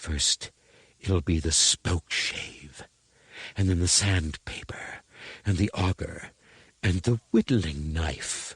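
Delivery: cutting, sharp, whiplash-like stage whisper. A woman threatens Cut-Angle, her voice sinking to a whiplash half-whisper. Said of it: "Her voice sank to a whiplash whisper".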